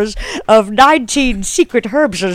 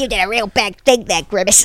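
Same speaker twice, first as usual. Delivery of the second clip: blaming, accusing delivery; 5 dB quieter than usual. Acting out the Hamburglar blaming Grimace: Hamburglar voice blaming. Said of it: "he's like".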